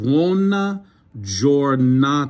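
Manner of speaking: slow, deliberate, with "buona" drawn out. Teaching Italian greetings to listeners so they hear the phonics: speaking slowly on purpose. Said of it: "I'm saying it slow very purposefully".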